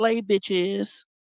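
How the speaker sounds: high, flamboyant, camp delivery.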